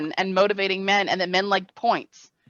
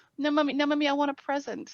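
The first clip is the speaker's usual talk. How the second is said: put-on high little two-year-old toddler voice; 6 semitones higher, 6 dB quieter than usual. Retelling her two-year-old refusing the kiss: imitating her two-year-old. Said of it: "He's like".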